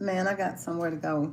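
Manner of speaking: ordinary talk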